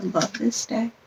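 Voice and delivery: ordinary talk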